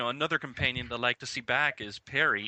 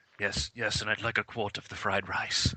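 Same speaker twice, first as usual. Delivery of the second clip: put-on evil voice, lower; 3 semitones lower than usual. Imagining the actor ordering Chinese food: Mark Strong evil voice. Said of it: "you could just imagine him going".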